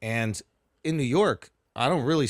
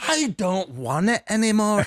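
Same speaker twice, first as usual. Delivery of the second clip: scolding tone, higher and louder; 10 semitones higher, 5 dB louder than usual. Retelling her mom refusing a seat: imitating mom chastising. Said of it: "Just chastising this whole bus".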